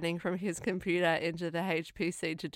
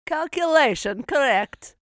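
very loud, pitched-up put-on Russian accent; 8 semitones higher, 9 dB louder than usual. Quoting a computer graphic from a movie scene, in a russian accent. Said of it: "I don't know why the Russian accent".

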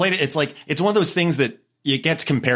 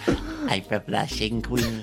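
witch-like put-on voice; 6 semitones lower, 8 dB quieter than usual. Podcast guest jokes and slips into a voice that sounds like a witch. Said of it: "that sounded like a witch".

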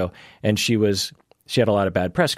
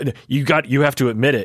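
acted-out pushy, barked delivery; 5 semitones higher than usual. Retelling how radio hosts treated callers: imitating someone barking a demand. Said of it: "you just bark at them like".

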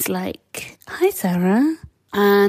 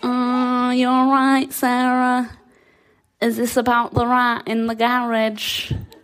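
put-on Manchester accent; 3 semitones higher than usual. Retelling what a Newcastle man dressed as a rat said to her, in a Mancunian accent. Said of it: "So he had a Mancunian accent".

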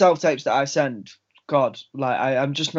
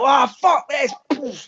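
play-acted very high, slow, fed-up, frustrated blowup; 12 semitones higher, 4 dB louder than usual. Recounting a self-tape gone wrong, acting out losing one's temper. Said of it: "halfway through it I sort of lose my head".

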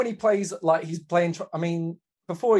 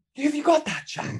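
distinctive, odd voice, very high-pitched; 10 semitones higher than usual. Retelling how he grabs a bloke by the scruff: imitating his particular voice. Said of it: "It's just in that voice that he has".

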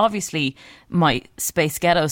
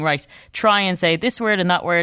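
plain

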